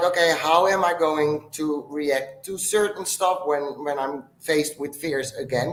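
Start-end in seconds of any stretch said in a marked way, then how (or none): none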